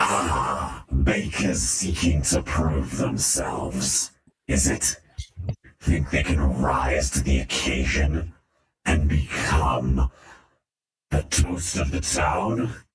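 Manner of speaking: smothered, muffled, crusty monster voice. Voicing a bread creature calling out to bakers: muffled, crusty voice. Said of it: "a muffled, crusty voice calls out".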